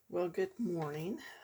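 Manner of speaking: drowsy-sounding voice. Greeting viewers in the morning after using an inhaler: groggy voice. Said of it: "I have my groggly voice".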